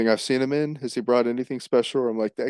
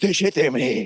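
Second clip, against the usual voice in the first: weak, feeble voice straining at anger; 2 semitones higher than usual. Rating the cast's voices, quoting Timothée's line as he gets angry: mock-angry Timothée impression. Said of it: "And then he gets angry".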